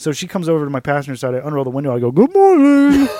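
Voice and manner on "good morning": very loud, very high, spoken through a full mouth. Retelling greeting a police officer through the car window, retelling talking with mouth full. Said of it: "with a mouthful of food".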